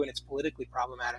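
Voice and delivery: very fast, rattled-off delivery.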